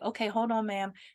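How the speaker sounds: mock sleepy voice, as if just woken. Retelling a lady on a payment phone call, imitating a just-woken voice. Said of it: "sounded like she was in her bathroom, like she just woke up".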